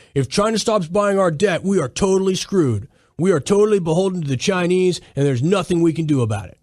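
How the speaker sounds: put-on dumb, idiotic voice. Discussing the trade war, voicing what people are saying, in an idiot internet voice. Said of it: "That's my that's my idiot uh, internet voice".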